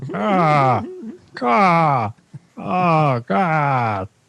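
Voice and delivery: very slow, drawn-out Boston-accented drawl. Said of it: "What if Ray Romano was from Boston?".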